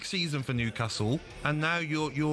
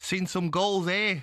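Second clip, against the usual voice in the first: clumsy, bad attempted Geordie accent; 4 semitones higher than usual. Trying out geordie phrases from a list: attempted geordie accent. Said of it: "You sound like Brazil".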